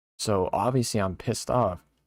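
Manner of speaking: ordinary talk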